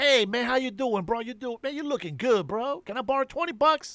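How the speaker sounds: fake-friendly, over-chummy, schmoozing tone. Describing a friend who only comes around to borrow money, imitating a fake-friendly buddy. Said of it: "the bad friend that pretends to be your friend".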